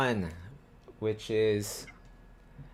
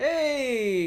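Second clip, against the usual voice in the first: cheerful, high, loud happy hail. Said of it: "everybody's like".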